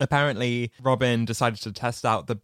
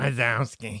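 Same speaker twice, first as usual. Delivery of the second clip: acted slow rasping creature voice. Quoting a cartoon character voiced by the same actor. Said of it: "It's Roz from Monsters, Inc".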